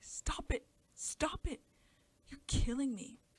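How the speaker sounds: terrified, hysterical shrieking, very loud, drawn out. Narrator reading the child's line as she is held, shrieking hysterically. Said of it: "she shrieked terrifyingly, hysterically".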